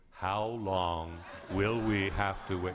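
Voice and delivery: very slow, drawn-out, with rising pitch. Retelling how she bent over and asked him, very slow. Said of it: "she said very slowly".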